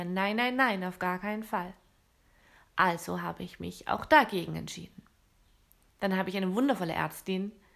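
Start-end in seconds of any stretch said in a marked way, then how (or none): none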